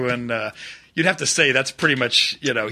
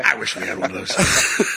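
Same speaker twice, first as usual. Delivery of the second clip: put-on low, gruff, growling movie general voice. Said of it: "Slapping his stomach".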